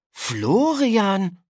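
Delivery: surprised calling out. Narrator reads a girl opening a classroom door to find a classmate, calling out in surprise. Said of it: "rief Yolanda erstaunt".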